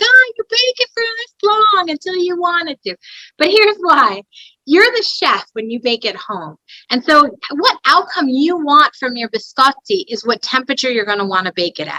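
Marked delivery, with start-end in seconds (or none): 0.0-3.0 put-on very high-pitched Italian grandmother voice. Explaining baking temperatures to viewers, in an Italian grandmother voice. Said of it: "she sounds like an Italian grandmother".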